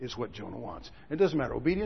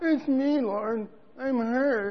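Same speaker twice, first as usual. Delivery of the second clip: very high, very slow, mocking, pleading wail; 10 semitones higher, 5 dB louder than usual. Mocking how people come to god when hurt, in a mocking imitation. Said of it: "Does it sound like I'm mocking".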